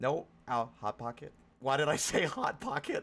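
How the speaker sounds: panicked, swooping, rising freaked-out blurt. Reacting to something in a game, freaking out. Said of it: "I'm freaking out!".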